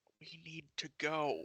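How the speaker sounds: very slow, hushed half-whisper. Half-whispering to the party in character to flee a giant: half-whisper. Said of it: "And I'm going to whisper".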